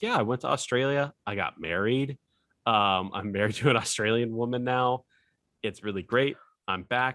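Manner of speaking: unbothered, matter-of-fact, breezy, offhand chatter. Retelling what an airman back from going AWOL said, imitating his nonchalant tone. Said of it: "he was talking like nothing ever happened".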